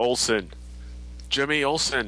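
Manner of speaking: voice-of-God delivery, as if from above. Retelling how he first starts off the show, in a voice of God. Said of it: "it sounds like the voice of God".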